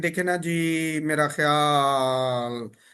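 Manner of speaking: very slow, trailing, stretched phrase endings. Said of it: "ये जो बात को ट्रेलिंग करते हैं, लंबा खींचते हैं".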